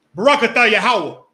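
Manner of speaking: booming, loud, hollered yelling in a man's voice. Telling a friend how the officer does the prayers, imitating Officer Tazadot's yelled prayer. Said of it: "it's a yelling, it's a man voice".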